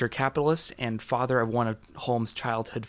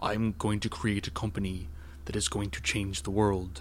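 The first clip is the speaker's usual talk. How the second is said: put-on, incredibly deep voice, pushed way down; 3 semitones lower, 4 dB quieter than usual. Imitating how she would talk about her company, deep Elizabeth Holmes voice. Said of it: "She spoke in an incredibly deep voice. She would talk like this".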